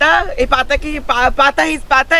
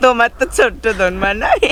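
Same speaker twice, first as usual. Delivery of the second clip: usual speaking voice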